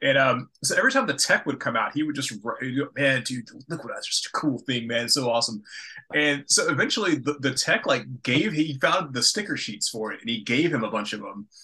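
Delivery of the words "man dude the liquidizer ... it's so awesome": mimicked amazed, awed voice. Retelling how a coworker reacted to the liquidizer: imitating an amazed coworker. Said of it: "so amazed with these".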